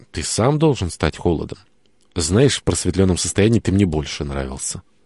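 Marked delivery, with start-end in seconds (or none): none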